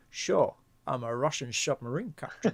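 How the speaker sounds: put-on Scottish-accented movie-star voice. Joking about a Scotsman playing a Russian captain: Sean Connery accent. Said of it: "Sean Connery's accent".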